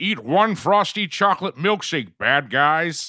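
very slow, dragged-out, high cartoon voice. Recalling the Simpsons arcade game, joking as Homer: season one Homer impression. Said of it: "Is that your Homer impression?".

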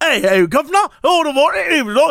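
mock British accent. Describing a very stereotypically british woman, the speaker imitates her stereotypical british accent. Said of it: "She had like".

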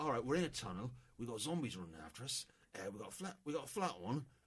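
put-on London-accented voice. Retelling people in a tunnel chased by zombies, in a London accent. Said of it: "This is my London accent".

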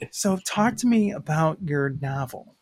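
tired, dead flat, boring radio-host voice. Recalling an episode, the speaker does a tired NPR DJ voice. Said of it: "I sound like a tired NPR DJ".

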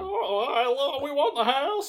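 very high-pitched, slow, nerdy-sounding voice. Correcting another speaker's retelling of Ben winning the house: nerdy Ben voice. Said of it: "he does it way more nerdy than that".

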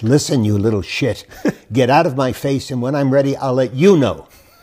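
cutting, biting, haughty movie-star diva tone. Speaker recounting asking the star a question on set, shouting in Bette Davis voice. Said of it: "in the top of her Betty Davis voice".

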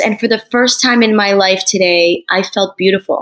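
ordinary talk

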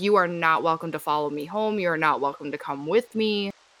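very stern, firm and serious. Showing what to say to spirits at the trail: very stern. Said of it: "very sternly, and you have to mean it".

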